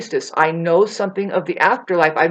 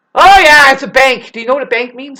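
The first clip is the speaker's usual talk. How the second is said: harsh, irritated, angry, raised and higher pitched; 5 semitones higher, 8 dB louder than usual. Mid-rant, the speaker later apologizes for their tone of voice: angry tone. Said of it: "Sorry about my fucking tone of voice".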